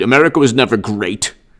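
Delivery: preachy, sermon-like politician voice. Imitating Cuomo's hilarious way of speaking: imitating Cuomo. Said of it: "Did I say it good?".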